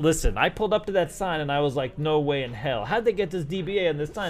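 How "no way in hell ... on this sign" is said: ordinary delivery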